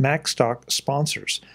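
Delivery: slow, careful, deliberate enunciation.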